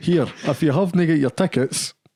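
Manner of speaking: Scottish-accented speech. Telling the audience about tickets while the other speaker translates, Scottish accent. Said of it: "translate for people that aren't in Scotland".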